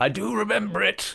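put-on high voice with weird Dutch accent. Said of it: "It's a weird Dutch accent".

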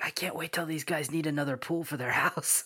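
whispered aside. Recalling what he whispered to his buddy, retelling a whisper. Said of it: "I whispered to him".

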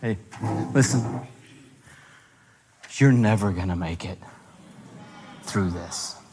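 deep devilish voice. Acting out what the devil says at your table: voicing the devil. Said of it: "given the devil a seat at your table".

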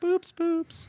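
squeaky, very high-pitched, cute tiny critter voice. Reading odd animal names aloud, saying the fish's name in a cute little creature voice. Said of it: "making it have a cute little voice".

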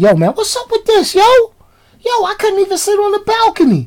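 laid-back, casual, cool delivery, very high-pitched. Retelling how he approached a housekeeper about the smell: imitating himself acting cool. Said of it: "so I come up all cool".

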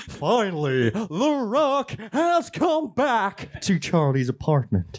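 high, slow, boastful wrestler announcer voice. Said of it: "wrestlers entering the ring".

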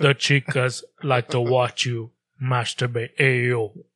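faked deep, dim-witted voice.

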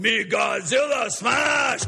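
put-on child's voice playing a giant rampaging movie monster. Retelling how a big kid played Godzilla at the sandcastles: Godzilla voice. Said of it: "play Godzilla".

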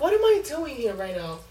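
ordinary talk, nothing marked

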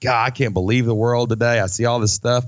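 ordinary delivery

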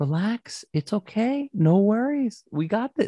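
put-on sweet, soothing motherly voice, very high. Retelling how Mom came over while they frantically set up: imitating super sweet mom. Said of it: "Like super sweet".

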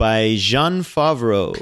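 put-on French accent. Naming the director of a movie on a list: french accent on a name. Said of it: "I don't know why I gave him that accent".

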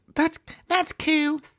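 soft, high-pitched voice. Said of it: "She said".

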